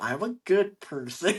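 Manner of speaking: question-like rising pitch at the end on person. Showing how people second-guess themselves, rising at the end like a question. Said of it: "we say it with a question mark at the end".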